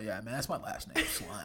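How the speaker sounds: put-on very low, smug, cocky gum-chewing kid voice. Acting out the cool kid in high school, chewing gum. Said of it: "He's all chewing gum".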